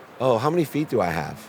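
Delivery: calm, gentle, kind voice. Retelling what a man asked him as a boy: retelling a calm, kind voice. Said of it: "in the calmest, nicest voice".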